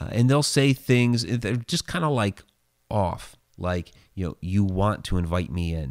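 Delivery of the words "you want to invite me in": creepy, flat, toneless monotone voice, lower pitch. Imitating the things that talk to you inside your house, creepy monotone voice. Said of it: "they talk very monotone".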